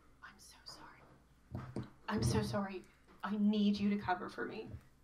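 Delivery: hushed stage whisper. Ode leans over to Mel and whispers to him; whispering. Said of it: "she whispers to him".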